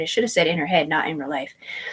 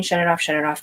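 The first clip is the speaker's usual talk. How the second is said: normal talking voice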